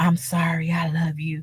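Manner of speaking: slow, drawn-out hushed whisper. Retelling what someone said on the show: imitating someone whispering. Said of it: "sitting up here whispering".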